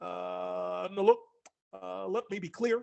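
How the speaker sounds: very slow, creaky, halting delivery with drawn-out "uh". Imagining a GPS voice at a fork in the road: Barack Obama voice. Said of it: "Barack Obama would be good".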